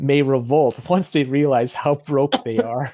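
fighting back laughter, suppressed laugh. Reading a news headline aloud, holding back a laugh. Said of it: "I can't say this without laughing".

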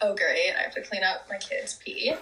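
play-acted, unamused, unimpressed voice. Retelling how her mom reacted to her toddler's news, mock-unimpressed mom.

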